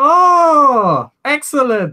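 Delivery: shrill, very loud, high, booming, drawn-out "oh". Describing a familiar figure's voice heard before he appears: loud booming voice. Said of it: "Just kind of boom like across the entire building".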